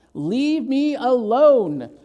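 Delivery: gruff, dismissive growling voice. A narrator reads the bear's line in the story, growling. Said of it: "he growled".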